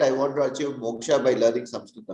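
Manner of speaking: ordinary delivery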